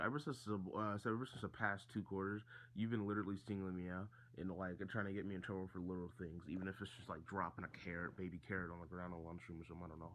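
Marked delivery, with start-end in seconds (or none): none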